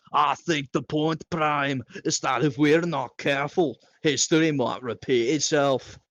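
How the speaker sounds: put-on very loud, thick, heavy Scottish accent. Hovarth answers a question on Smart's behalf: thick Scottish accent. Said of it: "speaking in a thick Scottish accent".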